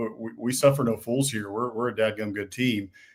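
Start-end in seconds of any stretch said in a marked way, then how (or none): none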